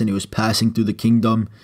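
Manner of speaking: plain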